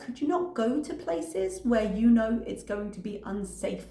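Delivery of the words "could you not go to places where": ordinary delivery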